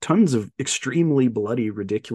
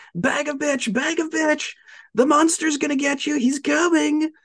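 very high-pitched, furious, jeering yell. Retelling a movie scene where a guy yells at a girl: imitating someone yelling. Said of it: "yelling at her".

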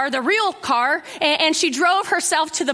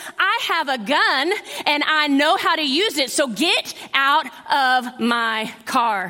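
acted firm, slow, commanding and forceful delivery; 2 semitones lower than usual. Telling a story, the speaker acts out a woman confronting men in her car: retelling a forceful warning. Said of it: "with a forceful voice".

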